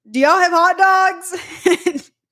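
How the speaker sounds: mock very high, drawn-out holler. Retelling how a friend shouted a question at a worker: imitating someone shouting. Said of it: "shouts at a worker".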